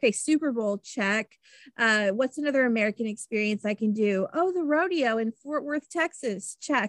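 ordinary talk

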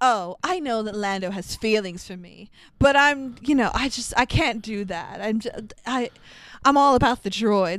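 plain

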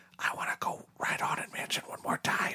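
quiet, leaned-in whisper. Retelling asking the wife to ride one more time: retelling a whisper. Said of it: "I just kinda leaned in and whispered".

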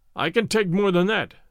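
ordinary delivery

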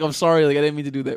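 mock-sorry tone, spoken through laughter. Imagining how a woman might apologize for an accident, imitating a laughing apology. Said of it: "she's laughing".

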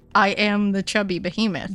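ordinary delivery

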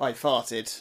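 ordinary delivery

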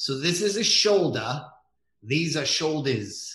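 thick, laid-on New England accent. Showing how the New England accent handles singular and plural words: New England accent. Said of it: "the New England accent".

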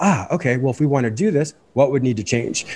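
normal talking voice

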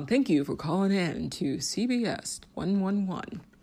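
put-on corny, cheesy radio game show host voice. Joking about sounding like a corny radio game show, in a radio host voice. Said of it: "was it the radio host?".

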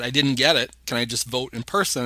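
ordinary talk

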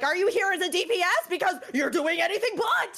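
acted out, very high-pitched, angry yelling. Retelling yelling at a teammate, heard from the other room: retelling own yelling. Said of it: "like yelling".

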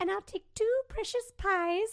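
put-on woman's voice. Retelling a TikTok guy ordering pizzas as a woman, doing her voice. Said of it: "he can do her voice".

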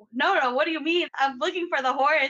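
put-on high, loud, pleading child's protest.

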